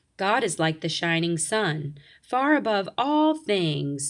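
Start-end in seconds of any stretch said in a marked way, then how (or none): none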